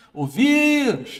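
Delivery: very high, stretched-out yell on vírus. Calling out a word aloud the way it was taught: shouted word vírus. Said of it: "chamar a palavra alto como se você estivesse gritando".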